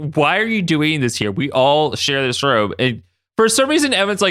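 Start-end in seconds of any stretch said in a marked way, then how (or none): none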